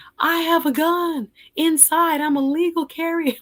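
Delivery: put-on very high-pitched shouting. Retelling how a judge yelled at police outside her house: imitating someone yelling.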